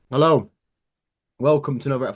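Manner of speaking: words chewed around food, mouth full. Host opens a podcast episode, talking with cornflakes in mouth. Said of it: "I've still got cornflakes in my mouth".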